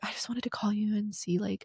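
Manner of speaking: soft whispered impression. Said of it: "I hate your impression of me".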